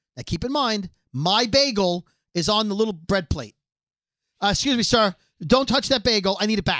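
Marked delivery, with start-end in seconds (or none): 4.4-6.8 put-on, mock-upset, demanding tone. Telling a story about a waitress taking a bagel, imitating an upset waitress. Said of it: "like upset".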